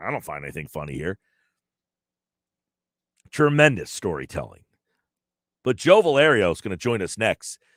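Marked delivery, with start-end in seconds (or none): 0.0-1.2 dead-serious, very low, flat deadpan. Retelling a story where Brady deadpans a joke: imitating Tom Brady's deadpan. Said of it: "Brady's like".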